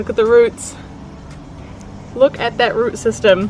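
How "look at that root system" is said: plain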